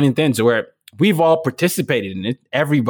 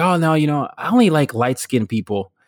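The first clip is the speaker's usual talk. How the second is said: usual speaking voice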